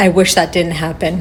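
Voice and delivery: normal talking voice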